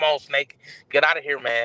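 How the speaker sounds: ordinary delivery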